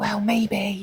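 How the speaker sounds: soft, high, barely-there little half-whisper. Retelling her answer about still having feelings: imitating a half-whisper. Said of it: "kinda whispers it".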